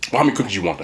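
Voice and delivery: quick, snappy, play-acted snapped-back tone. Retelling the worker's reply again: imitating a snappy comeback. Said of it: "One man's gonna snap back".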